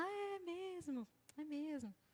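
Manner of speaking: soft-spoken, slow meek voice. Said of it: "fala baixinho".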